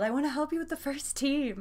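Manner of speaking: put-on yell. Retelling what another person just yelled across the room: imitating someone yelling. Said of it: "Chris just yelled".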